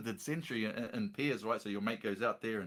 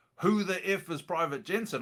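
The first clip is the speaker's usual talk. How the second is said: big, scary, loud, pitched-up soldier's yell; 8 semitones higher, 5 dB louder than usual. Retelling being called out at a company formation: imitating a scary Maori soldier. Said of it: "this big, scary Maori fella walks out the front and he goes".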